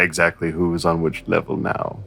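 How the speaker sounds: soft, low-pitched voice. Sidling up to a character in the game, asking quietly: whispering in character. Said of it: "Keep my voice low".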